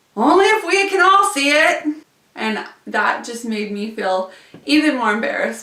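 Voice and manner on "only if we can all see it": shrill, very high, loud teasing yell. Retelling what the guy right behind the speaker yelled, retelling a yell. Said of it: "the guy right behind me yelled".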